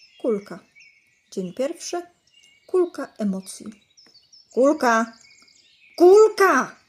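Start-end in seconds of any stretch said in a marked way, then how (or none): 4.5-6.7 very loud, high, furious angry calling out. Narrator reads the mother calling her child while running through the house: shouting angrily. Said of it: "Krzyczała mama ze złością".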